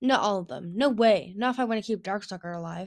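ordinary delivery

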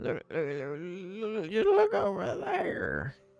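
put-on very high, slow, swooping elderly goblin voice. Voicing an old goblin pointing out toward Prospera: old goblin voice. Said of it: "the old goblin just holds his hands out shakingly".

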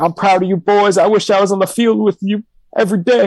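acted, high-pitched tearful crying voice through tears. Retelling a video of a fan crying to the camera: imitating a crying fan. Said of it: "he's crying to the camera".

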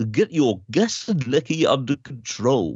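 put-on voiceover voice like old TV adverts. Showing an impression from the actor's old adverts: Jim Broadbent impression. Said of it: "I used to be able to do".

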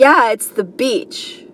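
play-acted rude, dismissive tone. Retelling an answer to "are you working out": imitating own rude reply. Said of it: "Rudely, I said that".

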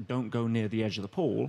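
normal talking voice

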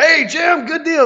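loud, very high-pitched, hustling used-car salesman voice. Contrasting himself with the other speaker's smooth radio voice: loud used-car salesman voice. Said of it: "I'm over here loud like a used car salesman".

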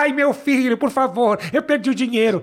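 put-on little old woman's voice. Retelling how a man uses a voice modifier to sound elderly: old lady voice. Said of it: "ele faz voz de velhinha e fala".

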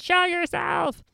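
very high, aggressive, raw rasping scream. Recounting a man confronting a spirit, retelling a scream. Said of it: "he just screams".

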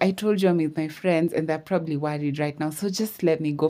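ordinary delivery

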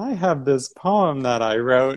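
sheepish.

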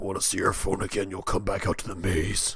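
low, scary, menacing threatening voice. Pitching a corn maze prank, the speaker voices the caller, in the scariest voice. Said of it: "with the scariest voice".

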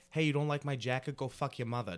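aggressive, high-energy comic delivery. Describing New York comedy, imitating an in-your-face New York comic. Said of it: "it's in your face. It's a lot of energy".

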